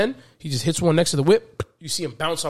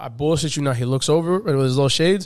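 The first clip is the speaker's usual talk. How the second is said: ordinary delivery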